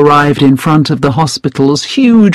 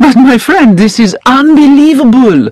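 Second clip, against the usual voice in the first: exclaiming at a very high pitch; 9 semitones higher, 3 dB louder than usual. A narrator reads LeBlanc responding to Jessop, exclaiming. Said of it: "exclaimed LeBlanc".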